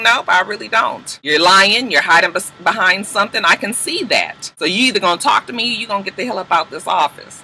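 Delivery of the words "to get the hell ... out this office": ordinary talk, nothing marked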